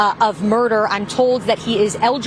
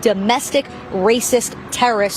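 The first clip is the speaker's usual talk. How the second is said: ordinary talk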